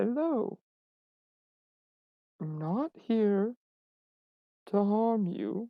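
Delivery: gentle, soft, very slow soothing voice. A player's character addresses a creature; soft voice used with horses. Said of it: "back to my like really like soft voice of like dealing with horses".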